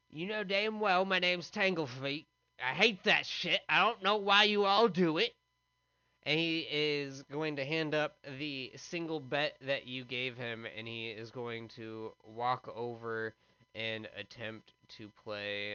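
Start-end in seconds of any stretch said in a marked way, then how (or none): 0.2-5.4 very agitated, worked-up voice with raised pitch. Voicing the guard as the casino owner taunts him, very agitated Tanglefeet. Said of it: "very, very agitated".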